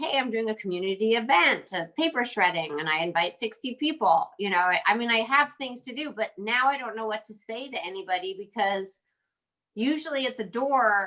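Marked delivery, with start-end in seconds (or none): none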